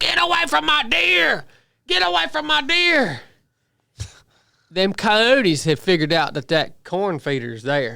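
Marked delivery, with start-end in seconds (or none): 0.0-3.2 shrill, ragged, very high screaming. Retelling how Brooke ran out the back door at coyotes: imitating Brooke screaming. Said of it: "she starts screaming".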